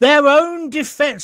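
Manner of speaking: worked-up outburst. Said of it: "I'm getting quite worked up about it".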